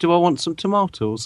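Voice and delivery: mock innocent voice. Retelling what the listener said at the end of a conversation, imitating an innocent voice. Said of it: "the most innocent voice in the".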